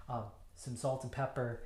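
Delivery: ordinary delivery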